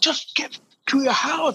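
play-acted very high, loud, screamed yelling. Retelling how a companion reacted on the street: imitating someone screaming. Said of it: "He's just screaming at me".

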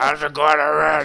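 put-on very loud, high, raspy old woman smoker's voice. Imitating your grandmother, who smoked a lot, greeting someone in her smoker's voice. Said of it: "that smoker's voice".

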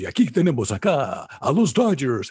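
slow, dramatic Spanish-language sports announcer delivery. Describing how the Spanish-language announcers all talk, sports announcer voice. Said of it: "in the announcers".

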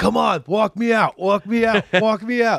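mock yell, high-pitched and slow.

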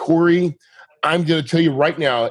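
ordinary delivery

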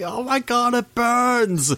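very high, dragged-out, agonized shriek. Acting out someone screaming from the furnace: screaming. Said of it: "you hear the screaming".

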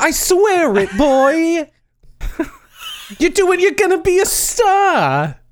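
put-on old Canadian accent. Asked about the canadian impression, the speaker keeps it going: old canadian accent. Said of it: "This is what old Canadians sound like".

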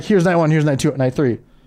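ordinary talk, nothing marked

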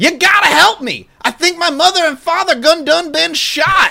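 play-acted very high, hollering shout. Acting out the man entering Henry's Bar and calling to everybody nearby, imitating Ron DeFeo shouting. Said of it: "shouting to everybody nearby".

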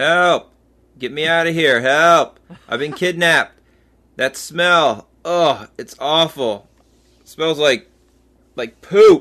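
loud hollering calls. Doing an impression of Dom, kidnapped, calling for help: imitating Dom calling for help. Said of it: "here's a message from Dom".

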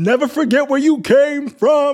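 shrill, very high hollered yell. Retelling how a friend yelled at a passing car: imitating a friend yelling, deep voice. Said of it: "dropped it into her bass and yelled".

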